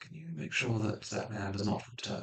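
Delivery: hushed, quiet, barely voiced whisper. As the Graven, who followed you out into the gallery, whispering to you. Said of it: "and whispers to you".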